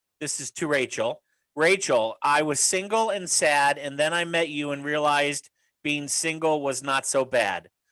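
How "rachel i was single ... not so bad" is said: ordinary talk, nothing marked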